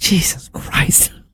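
quiet under-the-breath mutter to oneself. Retelling a remark made while the speaker's wife hung decorations, said quietly to oneself. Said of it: "I said it quietly to myself".

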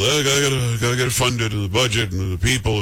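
put-on hesitant hemming and hawing. Speaker addressing someone who won't act, mocking their hemming and hawing. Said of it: "You're hemming and hawing about".

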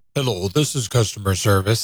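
low, canned, automated customer-service AI voice. Describing a phone menu that switched voices, the speaker imitates the automated AI phone voice. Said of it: "it's an AI generated thing".

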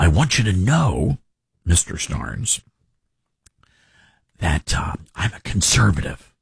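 confiding stage whisper. Retelling how an audio engineer quietly confided in him: imitating someone whispering. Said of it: "And he whispers".

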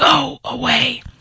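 high, gravelly, raspy, dismissive tone. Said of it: "in his gravelly voice".

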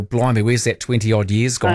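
ordinary talk, nothing marked

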